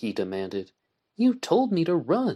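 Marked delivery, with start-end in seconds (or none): 1.2-2.4 very high, quavering, trembling voice. Narrating a story: she answers the man who told her to run, trembling voice. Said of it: "she answered in a trembling voice".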